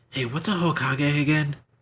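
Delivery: quiet sidelong half-whisper. Player character half-whispering a question to the guy across the counter, half-whispering. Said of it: "I whisper over to the guy".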